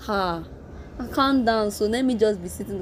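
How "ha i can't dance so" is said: usual speaking voice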